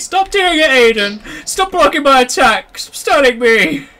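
shrill, very high, very slow drawn-out yelling. Retelling how another player yelled during a game: imitating someone shouting. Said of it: "you were shouting at me".

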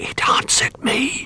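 hushed whisper. Little Bear tells the others after the clock taps back, whispering. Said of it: "whispered Little Bear".

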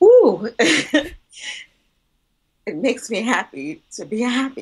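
high, choked-up, teary, emotional laugh.

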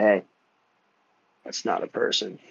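quiet, hushed whisper. Gesturing for the people behind you to stop, whispering to them. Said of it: "I'm gonna kind of whisper to them".

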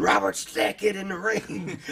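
screamed out, very high. Retelling how his brother reacted watching him on TV, retelling a scream. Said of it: "he was screaming".

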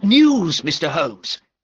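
eager, loud, excited burst of words. Narrator reading a character who hurries into the room bringing news, excited. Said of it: "he said excitedly".

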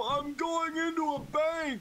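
put-on elderly man voice. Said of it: "puts on his best old man voice and says".

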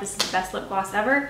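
ordinary delivery

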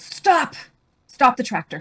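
sudden high, loud yell. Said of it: "my husband suddenly yells".

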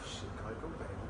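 low, very soft, under-the-breath delivery.

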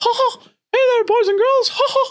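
high, loud squeaky voice. Showing what little Mickey Mouse will say, in a Mickey Mouse voice. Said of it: "little Mickey Mouse will go".

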